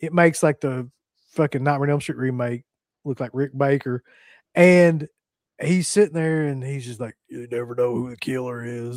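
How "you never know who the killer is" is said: low, deep, try-hard slasher-villain voice. Retelling a movie character's line, attempting the Freddy voice. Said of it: "He tries to do, like, the Freddy voice".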